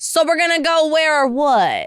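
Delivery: put-on drunk Jersey accent. Showing how they talk whenever they get drunk, put-on drunk Jersey accent. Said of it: "I talk like Jersey".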